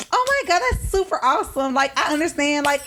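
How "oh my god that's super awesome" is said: higher, pitched-up tone. Showing how the tone rises when talking to somebody else: higher-pitched tone. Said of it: "my tone might get higher".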